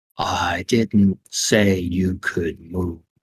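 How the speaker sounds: very slow, low and quiet, every word drawn out. Turtley looks at Gear one more time and speaks very slowly. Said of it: "and say very slowly".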